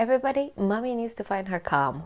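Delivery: normal talking voice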